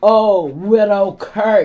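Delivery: loud, slow, heavily sarcastic drawl.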